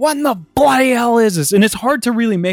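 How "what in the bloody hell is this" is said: acted-out, furious, angry screamed yelling. Retelling a character's outburst at lunch: imitating an angry scream. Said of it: "he just angrily sc-, screams, like".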